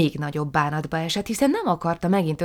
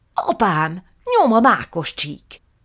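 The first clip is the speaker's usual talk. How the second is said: screeching, furious, loud, drawn-out shrieking; 3 semitones higher, 5 dB louder than usual. A young lady whose plan has failed starts shrieking for revenge: shrieking. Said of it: "visítozni kezdett".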